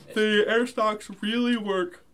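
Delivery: very high, loud, yawned words. Explaining something to the others, the speaker talks through a yawn. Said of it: "sorry, I'm yawning".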